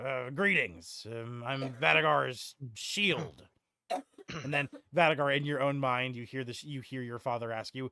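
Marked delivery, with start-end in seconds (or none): 0.0-3.4 put-on slow, gruff, older dwarf voice. Voicing a talking shield heard in a mind: older, gruff dwarven voice. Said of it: "a dwarven voice, similar to Vadagar's, but older and more gruff".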